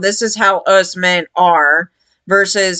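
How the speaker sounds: ordinary delivery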